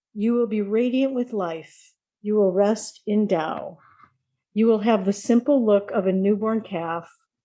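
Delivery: normal talking voice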